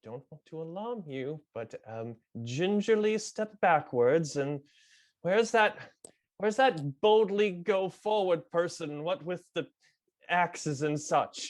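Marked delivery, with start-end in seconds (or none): 0.0-4.3 confiding aside, spoken close in. A player's character speaks into another character's ear, very quietly. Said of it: "very quietly into Garou's ear".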